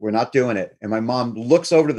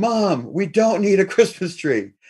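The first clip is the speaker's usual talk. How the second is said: high-pitched, tearful, begging pleading cry; 8 semitones higher than usual. Retelling how the speaker and brother pleaded with their mom: imitating crying in tears. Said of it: "literally in tears going".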